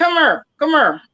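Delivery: put-on Texas accent, Dallas style. Describing how people from Dallas talk, the speaker imitates their Dallas accent. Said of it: "people from Dallas, they say".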